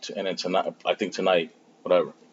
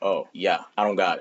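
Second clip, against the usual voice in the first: normal talking voice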